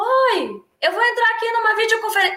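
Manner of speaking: very loud, high-pitched yelling at the top of lungs. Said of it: "E assim, aos berros".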